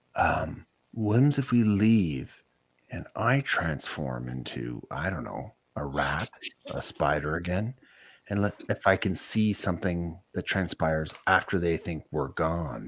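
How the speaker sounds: slow, hushed half-whisper under the breath. A player in a temple scene proposes a plan to the group, half-whispering. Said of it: "I'm going to whisper".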